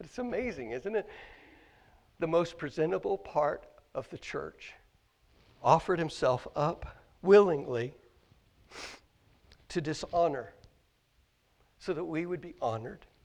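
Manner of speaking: choked up, getting emotional. Speaker talking about what Jesus did for us, choked up. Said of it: "I don't know why I'm getting choked up about this".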